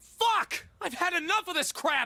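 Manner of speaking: very high, fed-up, furious, angry yell. Voicing a character who snaps after an hour without progress: angry outburst. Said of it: "the twink is angry".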